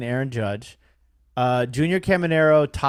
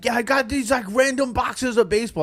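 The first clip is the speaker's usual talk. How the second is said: crazy, pitched-up New York guy voice; 9 semitones higher than usual. Retelling a conversation with a guy, do his crazy new york guy voice. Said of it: "like a a crazy like New York guy".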